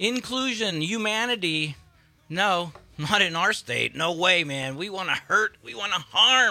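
high, loud, sarcastic mock voice.

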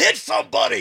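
high, loud, frustrated yell.

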